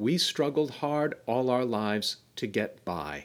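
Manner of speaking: normal talking voice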